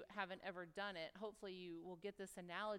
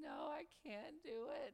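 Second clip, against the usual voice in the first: very slow, high, tearful voice, acted out; 8 semitones higher than usual. Retelling being scared on a zip line, family urging: retelling own tearful protest. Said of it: "in tears going".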